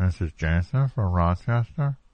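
slow, indistinct, unclear voice like a bad phone line. Showing a caller how their phone sounded: imitating Jansen's unclear phone voice. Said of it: "You're like".

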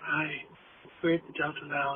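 very low, quiet, hushed sultry murmur. Imitating two people recording quietly at the delta lounge: imitating a hushed phone-sex voice. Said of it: "you both sounded like you were phone sex workers".

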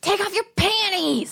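shrill, crude, rude yell, pitched very high. Retelling what a guy in the club yelled: imitating a guy yelling. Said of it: "one of them yells at me and goes".

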